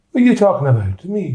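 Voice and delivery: put-on Irish accent. Retelling an anecdote and quoting Peggy's reply, Peggy in an Irish accent. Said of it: "That's Irish as well".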